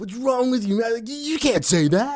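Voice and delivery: squeaky, terrible, very high, deliberately bad voice. Pretending to be Greg scolding about the podcast: terrible Greg impersonation. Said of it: "my really terrible Greg impersonation".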